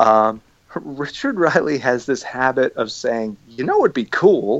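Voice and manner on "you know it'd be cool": a little bit of Southern drawl. Imitating a coworker's habitual phrase: imitating a slight Southern drawl. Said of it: "in a little bit of a Southern drawl".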